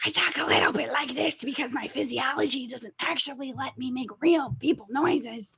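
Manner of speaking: put-on insect creature voice. Showing the bug people voice used in a game: bug people voice. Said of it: "the bug people voice over there".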